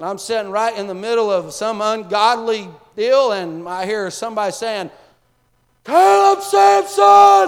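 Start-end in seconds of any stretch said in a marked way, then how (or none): 5.8-7.5 very high, ragged, rough hollering scream. Retelling a phone call where dad was imitating dad screaming. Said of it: "my dad's voice screaming at me".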